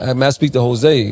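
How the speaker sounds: ordinary talk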